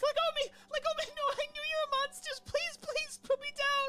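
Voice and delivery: very high, loud, pleading, shrill shrieks of terror. In a tabletop game, the narrator voices a grabbed girl, screaming. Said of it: "and she's screaming".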